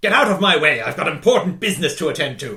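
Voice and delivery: gruff, loud military voice. Voicing a Sontaran who walks toward the players: gruff Sontaran soldier voice. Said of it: "Sontaran just sort of comes walking in your direction, and he's just like".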